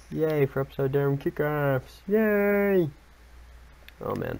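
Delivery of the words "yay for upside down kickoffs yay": weird, high froggy puppet voice, long "yay". Cheering for upside-down kickoffs: weird Kermit voice. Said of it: "Sounds like a weird Kermit voice".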